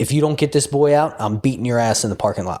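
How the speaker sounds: mock, mildly threatening hollered yell. Recounting a dead-quiet last out in a game, retelling a yell. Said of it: "he just stands up and yells".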